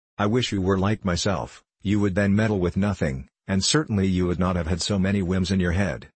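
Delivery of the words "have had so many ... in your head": ordinary delivery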